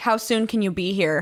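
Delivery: ordinary delivery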